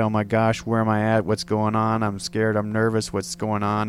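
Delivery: ordinary delivery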